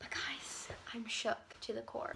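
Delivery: soft, hushed whisper.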